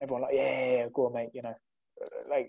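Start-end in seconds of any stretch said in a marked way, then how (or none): 0.3-1.3 put-on sarcastic, mocking tone. Retelling how a group at a party answered him: imitating a sarcastic reply.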